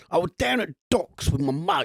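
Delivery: dreadful put-on British accent. Imitating Al Pacino's British accent for the others: Al Pacino's awful British accent. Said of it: "his British, British accent".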